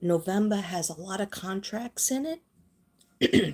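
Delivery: slow, cracking voice breaking up mid-line. Speaking directly to the viewer, voice cracking, giving out. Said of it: "I lost my voice on that one".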